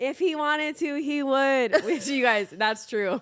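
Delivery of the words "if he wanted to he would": high, slow, emphatic scream with words drawn out. Retelling an old talk show clip with Natasha: imitating own past scream. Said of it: "I'm screaming".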